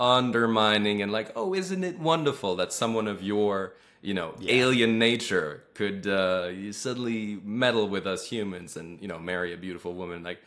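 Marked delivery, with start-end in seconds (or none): none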